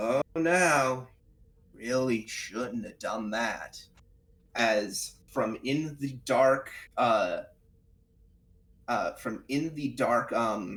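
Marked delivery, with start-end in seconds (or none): 0.0-3.8 loudspeaker announcement voice. Narrating a game scene as doors slam shut, as a voice over an intercom. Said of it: "a voice comes in over uh, the intercom".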